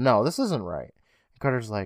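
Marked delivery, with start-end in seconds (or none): none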